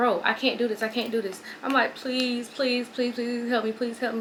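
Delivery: ordinary talk, nothing marked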